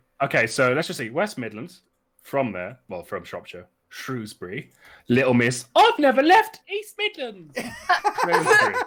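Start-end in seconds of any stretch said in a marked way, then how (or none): 5.1-8.8 very high, loud put-on Cockney urchin voice. Doing the orphan voice again while talking about Shrewsbury, in a Cockney orphan accent. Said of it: "You were doing a Cockney accent".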